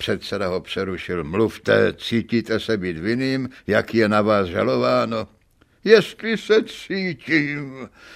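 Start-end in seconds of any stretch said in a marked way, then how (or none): 5.8-7.9 cried out with bitterness. The accused answers the presiding judge's question in court, crying out bitterly. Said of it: "vykřikl obžalovaný hořce".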